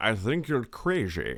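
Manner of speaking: low, slow put-on Scottish film-star accent. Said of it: "the Sean Connery way".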